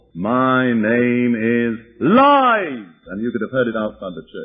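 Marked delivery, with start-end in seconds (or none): 0.2-2.9 very slow, loud, drawn-out, swooping demonic roar. Retelling what roared out of a woman during an argument in church, loud roar. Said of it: "out of this woman's voice came a loud roar".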